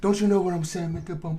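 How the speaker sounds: pet-talk voice, like talking to a dog. Talking sweetly to a pet dog: voice for talking to a dog. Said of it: "in that same voice".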